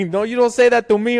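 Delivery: put-on loud, high-pitched, forceful Mexican accent. Retelling Canelo's reply after he thought he'd been insulted, Canelo impression, Mexican accent. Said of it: "like like some Mexican accent".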